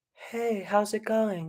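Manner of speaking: gentle, light, easy tone. Demonstrating breath and volume control in speech, greeting someone really, really gently. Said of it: "really, really gentle".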